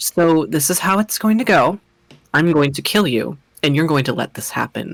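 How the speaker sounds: very soft, hushed, softest possible voice. Speaker retells what a character in their campaign says, imitating a very soft voice. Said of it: "she will do it in the softest voice possible".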